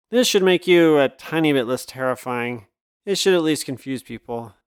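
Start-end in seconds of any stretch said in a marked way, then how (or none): none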